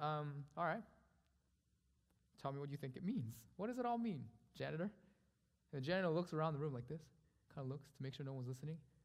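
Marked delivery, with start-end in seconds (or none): 0.0-4.9 mocking, sneering sarcasm with swooping sing-song tune. Retelling what a man said to the janitor, mock-sarcastic. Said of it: "And then with sarcasm".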